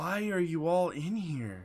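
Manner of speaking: concerned voice. Voicing a character asking why everyone is in here: concerned voice. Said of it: "she has concern in her voice".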